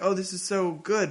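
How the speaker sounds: ordinary delivery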